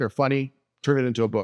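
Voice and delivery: ordinary talk, nothing marked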